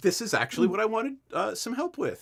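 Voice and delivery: keen, eager, excited, rising delivery. Voicing a robed man meeting a newcomer from the school: excited. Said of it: "He's very actually excited to meet you".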